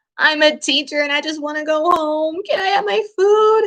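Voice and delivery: high, tearful, crying, begging voice. Retelling asking a manager for food after an hour's wait: retelling own crying plea. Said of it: "I started crying to this poor man".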